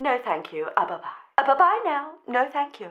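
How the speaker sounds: soft, high, very polite telephone voice. Telling listeners how to turn someone away: politest telephone voice. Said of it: "In your politest telephone voice".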